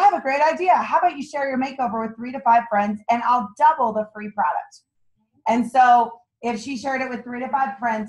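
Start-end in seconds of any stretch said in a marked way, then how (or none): none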